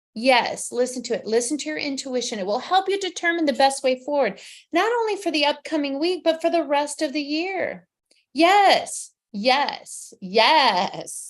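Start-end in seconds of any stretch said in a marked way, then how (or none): 8.4-11.4 loud, full drag queen delivery. A psychic host encouraging listeners to trust their intuition, in a drag queen voice. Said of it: "I sounded like a drag queen".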